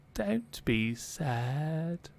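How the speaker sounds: put-on cracked little-girl voice, sad and drawn out. Game master voicing a voice that Chad hears, Mildred's cracked little-girl voice. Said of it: "like a cracked voice of a little girl going".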